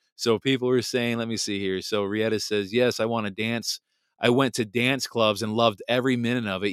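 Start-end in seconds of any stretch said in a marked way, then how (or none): none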